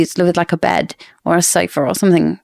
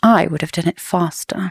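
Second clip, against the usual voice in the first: put-on British accent, laid on strong. Repeating Kat's remark, this time in a very British accent. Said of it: "In a very British accent".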